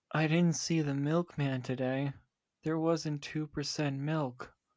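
numb, lifeless, flat, emotionless monotone. A co-host ad-libs how she basically sounds, imitating a quiet emotionless voice. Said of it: "basically sounds like this".

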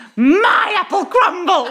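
excited, very high-pitched, loud squawking cry. Retelling flinging their apple crumble into their costume chest, squawking. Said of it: "I literally squawked".

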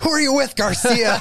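acted, very high, shrill announcer yell into mic. Retelling how an announcer closed the show, yelling into the mic: imitating Jericho yelling. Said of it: "he just yells into the mic".

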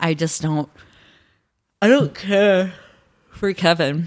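mid-yawn. Discussing episodes of a show with another speaker, yawning. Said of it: "Sorry, I'm yawning".

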